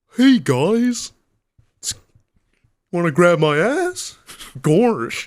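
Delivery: goofy cartoon dog voice, high and swooping. Trying out the best impression the speaker can manage: Goofy voice. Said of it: "the best Goofy I can come up with".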